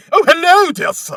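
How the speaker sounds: exaggerated posh British accent, very high, very slow. Imitating how Monty Python makes fun of British people: Monty Python posh British accent. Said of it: "when Monty Python makes fun of British people... Like that".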